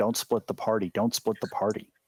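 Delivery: plain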